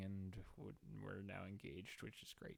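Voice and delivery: super low-key, very soft, unexcited delivery.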